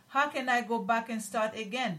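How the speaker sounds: ordinary talk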